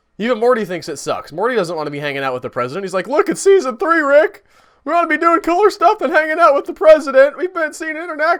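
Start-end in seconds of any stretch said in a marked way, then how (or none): 3.1-8.4 bad put-on voice, very high and loud. Retelling a cartoon episode scene, doing a Morty voice. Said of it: "this is my Morty voice".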